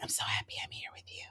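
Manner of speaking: very quiet, hushed, soft, breathy whisper. Retelling what she said to him, imitating a whisper. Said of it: "I don't know why I had to whisper it too".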